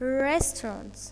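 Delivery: REST in restaurants stressed, said slowly. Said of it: "the first syllable is stressed".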